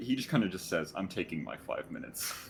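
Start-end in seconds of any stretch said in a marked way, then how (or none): 1.0-2.3 exhausted, worn-out character voice. Voicing a fallen, exhausted character resting in a bush: exhausted character voice.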